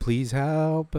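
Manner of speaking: pleading tone, sarcastic edge. Imitating a voice heard in a recording: imitating a sarcastic plea. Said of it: "It sounds kinda sarcastic to me".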